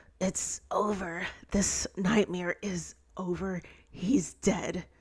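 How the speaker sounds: hushed, whispered voice. Reading a story aloud, voicing a rescuer's line: whispering. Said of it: "she whispers".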